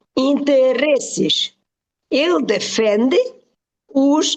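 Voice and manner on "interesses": interesses with second-to-last syllable -res- stressed. Separating the syllables to explain pronunciation: second-to-last syllable stressed in interesses. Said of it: "the stress is on the before last syllable".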